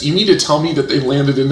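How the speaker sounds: usual speaking voice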